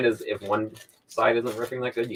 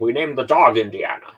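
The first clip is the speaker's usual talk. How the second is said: bad, clumsy put-on Scottish accent; 4 dB louder than usual. Talking about Indy and the golden idol, for some reason do a bad Sean Connery impression. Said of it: "just do a bad Sean Connery impression".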